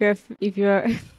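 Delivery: giggling while talking. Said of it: "Sorry, I'm laughing".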